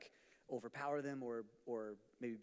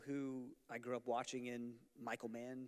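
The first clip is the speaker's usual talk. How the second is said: usual speaking voice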